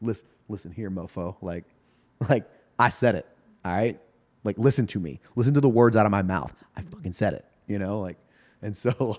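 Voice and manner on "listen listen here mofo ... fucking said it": mock-defiant, unyielding pushback tone. Retelling pushing back at a coworker who doubted them: imitating own defiant pushback. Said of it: "you got some fangs to you".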